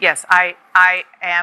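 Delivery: robotic, robot-like voice. Answering a question from the boss, sounding like a robot. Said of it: "you sound more like, like a robot".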